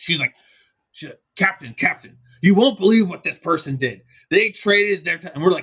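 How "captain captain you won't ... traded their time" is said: acted-out, legitimately angry, indignant outburst. Retelling a friend's outburst, imitating an angry person. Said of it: "she's angry, like, legitimately angry".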